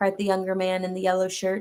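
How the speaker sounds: ordinary delivery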